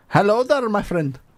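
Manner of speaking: adopted Indian accent, friendly. Answering which accents can be done: put-on Indian accent. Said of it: "you did Indian".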